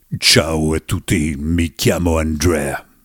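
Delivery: very deep, low put-on radio host voice. Mocking early radio hosts who tuned their microphones: put-on low radio voice. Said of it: "quando ti fai la voce bassa".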